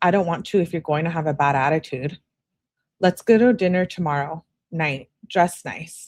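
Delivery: plain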